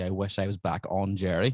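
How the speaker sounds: ordinary talk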